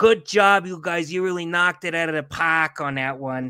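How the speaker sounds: put-on Boston-accented voice. Speaker impersonates their boss from boston, boston accent impression. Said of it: "I can kind of do the Boston accent".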